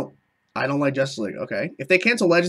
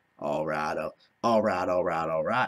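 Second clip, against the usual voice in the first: voice dropped very low; 9 semitones lower, 6 dB quieter than usual. Answering a request for a Matthew McConaughey impression. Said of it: "Can you do a Matthew McConaughey impression?".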